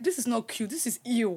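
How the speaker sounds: ordinary delivery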